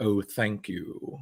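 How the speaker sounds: put-on soft, dry, precise British accent. Retelling the actor's reply when you said you love Hellraiser, as a dry, precise British Doug Bradley impression. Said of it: "that very dry thing".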